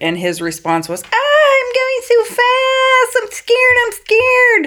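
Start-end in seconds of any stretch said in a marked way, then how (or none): 1.0-4.7 put-on very high, contemptuous, drawn-out taunting. Acting out a husband mocking his scared wife: acting out a mocking husband. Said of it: "That's mockery".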